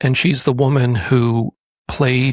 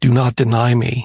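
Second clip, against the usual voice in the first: loud monster-like demonic voice, slower. Speaker retelling a woman demanding ketchup in a restaurant, in an Exorcist demon voice. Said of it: "in the voice of the demon from the film".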